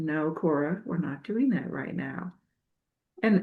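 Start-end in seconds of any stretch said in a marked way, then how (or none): 0.0-2.3 gentle, hushed, soft, low-energy half-whisper. Recounting stopping a dog from jumping, the speaker quotes themself, retelling a half-whisper. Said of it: "and I whispered".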